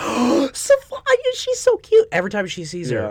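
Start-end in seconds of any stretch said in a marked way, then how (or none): 0.0-2.1 very high, very slow, swooping, bubbly put-on gushing. Retelling how someone reacts on seeing a baby: imitating Brylan gushing bubbly. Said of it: "she's just, like, bubbly".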